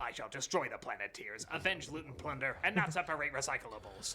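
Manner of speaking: low cartoon villain voice. Commenting on a dude's voice, a speaker imitates it: Captain Planet villain voice. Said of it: "This dude's voice sounds like a Captain Planet villain".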